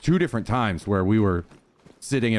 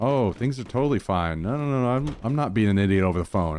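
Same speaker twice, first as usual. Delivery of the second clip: mock innocent, casual tone. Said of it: "he'd act like, in person".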